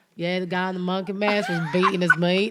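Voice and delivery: put-on Southern accent. Retelling what a brother told the police: imitating a southern accent. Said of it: "Southern, like, accent".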